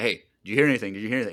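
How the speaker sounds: anxious, fast, frantic, freaked-out repeating. Retelling an episode scene, imitating Luthen freaking out. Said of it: "freaking out about Clea all the time".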